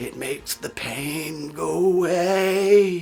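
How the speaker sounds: very slow, terrible put-on zombie voice. Recapping a Hollywood movie, the speaker imitates the brain-eating woman's reply: terrible impression. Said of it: "That was my terrible impression".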